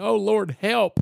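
frantic, desperate, high, loud scream. Retelling a near vehicle collision while praying: imitating own past scream. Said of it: "I was screaming".

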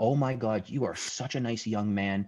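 put-on elated man's voice. Retelling a new neighbor's reaction to his welcome, imitating an elated man. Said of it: "This guy was elated".

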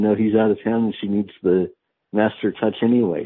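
ordinary talk

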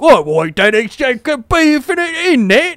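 put-on British accent. Showing how a British person would sound in the bit, British accent. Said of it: "And if you were British".

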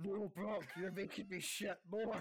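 loud, slow, guttural voice booming from the gut. Imagining a wrestler's complaint during a match: deep guttural Big Show voice. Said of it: "his really deep guttural voice just going".

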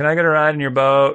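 acted mild half-yell. Retelling calling out to people in boats while lost on a run, acting out kind of yelling. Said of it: "I'm i kind of yelling at them".

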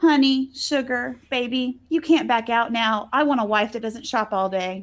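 put-on condescending voice. Recapping a show scene, quoting Gabe talking to Tina in Gabe's condescending voice. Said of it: "in his normal condescending voice".

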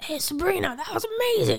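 put-on thick, very high, swooping New York accent. Retelling what a fan said to her: imitating his New York accent. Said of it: "he also would talk like this".

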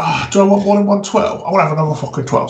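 put-on chav voice, pondering aloud, weighing things up. Retelling a shop exchange with a rude customer, doing an impression of how he talked, imitating a chav. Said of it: "he was like a proper chav".

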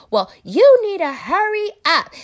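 very loud, very high-pitched impatient yell. Retelling a woman telling him to hurry up; imitating her impatient yelling. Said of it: "starts yelling".

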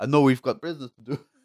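put-on South African accent. Quoting what he said, the speaker puts on a south african accent. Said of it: "that was a perfect South African accent".

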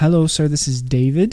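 put-on phone caller voice. Retelling the sales calls that come when getting home from work, imitating the Indian caller. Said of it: "It's always an Indian guy calling me".

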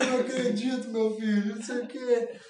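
put-on high, weepy, crying grandma voice. Retelling how his crying grandmother reacted to a letter: imitating grandma crying. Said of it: "minha avó chorando pra caralho".

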